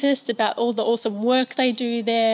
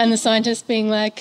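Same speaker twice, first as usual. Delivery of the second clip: plain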